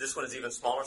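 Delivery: plain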